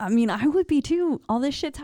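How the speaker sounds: high, scared, freaked-out rambling voice.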